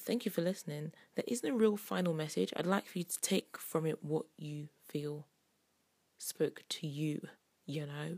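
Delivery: hushed, soft, quiet voice. A radio show host closes by thanking listeners, talking quietly. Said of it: "the reason I'm talking so quietly".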